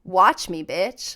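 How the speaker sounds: put-on confident, defiant tone. Retelling a reply to someone who insulted them: retelling a confident defiant retort. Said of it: "that confidence that goes".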